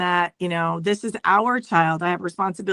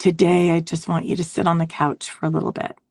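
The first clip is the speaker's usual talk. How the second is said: whispered voice. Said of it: "whisper into my ear".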